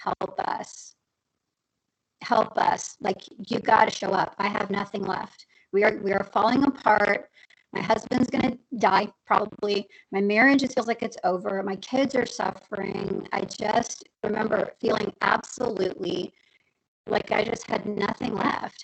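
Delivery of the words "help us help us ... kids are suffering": ordinary talk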